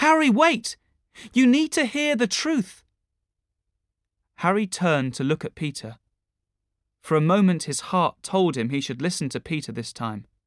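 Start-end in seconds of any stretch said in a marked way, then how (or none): 0.0-2.8 very high-pitched voice calling out. A man calls after his friend getting into a car, calling out. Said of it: "Peter called".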